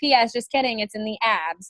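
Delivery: ordinary talk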